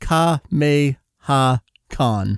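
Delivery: very slow, deliberate delivery. Showing how to pronounce a convention's name, said very slowly. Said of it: "I'm going to say it very slowly".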